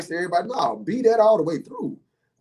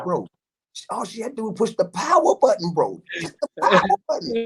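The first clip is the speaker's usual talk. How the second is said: confiding stage whisper, like a secret; 4 semitones higher than usual. Retelling what was whispered to the kid in another room: retelling a whisper. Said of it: "I whispered this to the kid".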